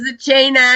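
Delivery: normal talking voice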